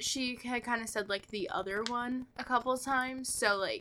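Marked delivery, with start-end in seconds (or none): none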